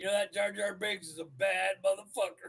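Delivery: mock utterly solemn, weighty, dead-serious grave tone. Speaker retelling what they told a friend on the phone: retold in most serious voice. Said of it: "In the most serious voice".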